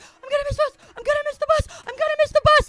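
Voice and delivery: shrill, very high, frantic panicked screaming. Retelling how, asleep as a fourth grader, they pulled at the door: retelling a panicked scream. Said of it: "and I'm screaming".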